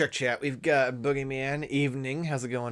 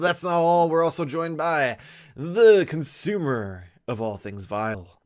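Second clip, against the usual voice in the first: normal talking voice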